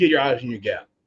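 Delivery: ordinary delivery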